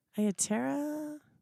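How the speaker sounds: mock rising, unsure intonation. Copying how the other speaker said a name: imitating a rising, unsure question. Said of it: "That's how it was said".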